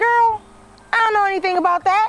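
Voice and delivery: very high, fast, incredulous outburst. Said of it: "I was like".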